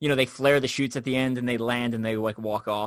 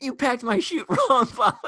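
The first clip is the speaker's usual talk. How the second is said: mock very high-pitched, furious, angry yelling; 13 semitones higher, 3 dB louder than usual. Retelling how a friend yelled at the rigger: imitating a friend yelling. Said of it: "he's yelling at him".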